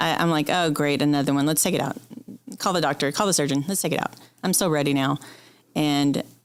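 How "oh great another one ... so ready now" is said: normal talking voice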